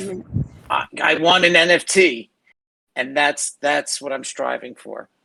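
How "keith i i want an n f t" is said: raspy, scratchy put-on voice, high and drawn-out. Imagining mom asking for an NFT: raspy impersonation of mom. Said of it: "my raspy impersonation of my mom".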